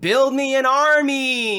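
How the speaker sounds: mock very high, drawn-out, theatrical delivery. Retelling a scene where a character summons an army: imitating a dramatic command. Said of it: "she's like".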